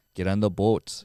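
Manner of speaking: thick Minnesota accent, dragged o's. Showing how a strong Minnesota accent drags the O's: strong Minnesota accent, dragged O's. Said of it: "a strong Minnesota accent is we drag our O's".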